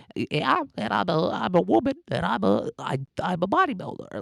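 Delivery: very high, slow voice, constantly cracking. Describing how female bodybuilders talk, imitating constant voice cracks. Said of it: "Constant voice cracks".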